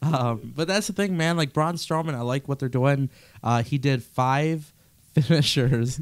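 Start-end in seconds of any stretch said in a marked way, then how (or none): 3.6-6.0 very slow, drawn-out speech through laughter. Describing a wrestler's five finishers to another speaker, laughing while talking. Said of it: "I can't even talk right now".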